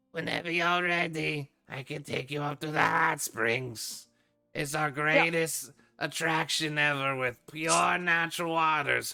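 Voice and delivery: high-pitched, loud goblin character voice. Voicing a goblin at a card table offering a tour: voicing a goblin. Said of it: "He goes".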